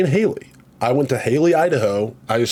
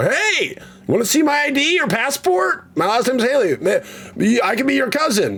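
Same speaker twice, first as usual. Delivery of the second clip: mock, shrill, very high, raised yell; 12 semitones higher than usual. Retelling how he greeted everyone he passed in Haley, Idaho; retelling a yell. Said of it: "I would yell at them and go".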